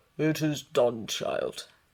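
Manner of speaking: deep put-on bear voice. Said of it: "said the bear's deep voice".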